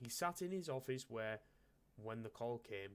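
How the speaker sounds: plain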